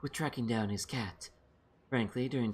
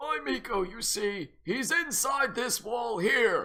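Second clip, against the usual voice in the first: put-on very high, loud old man voice; 11 semitones higher, 5 dB louder than usual. Trying out voices for an old man character: old man voice. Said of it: "This'll be a good voice for him".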